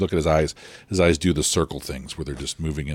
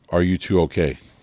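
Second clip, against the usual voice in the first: put-on very heavy, thick Greek accent, raised voice; 3 semitones higher, 6 dB louder than usual. Retelling how a girl came out of a building and asked them, very heavy Greek accent. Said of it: "she she says in a very heavy uh, Greek accent".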